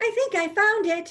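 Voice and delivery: very high, pleased, proud declaring tone. A girl searching through a stack of books speaks proudly to her friend. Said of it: "Gracie said proudly".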